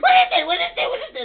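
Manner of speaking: shouting with excitement.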